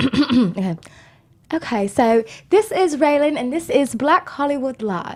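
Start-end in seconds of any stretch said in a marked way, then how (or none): 1.5-5.2 put-on posh, well-spoken English accent. Asked to try once more, the speaker does an intro in a put-on english accent. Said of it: "one more time".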